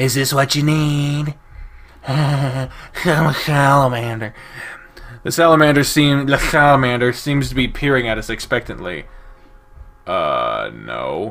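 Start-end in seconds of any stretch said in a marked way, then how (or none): 0.0-4.3 nerdy character voice. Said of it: "I don't remember what, uh, Daxton's voice was".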